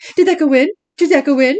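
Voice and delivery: high, loud, mocking, teasing taunt, repeated. Recapping the scene where Dean taunts Claire about her shot, mock-mocking as Dean. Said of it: "quite mockingly".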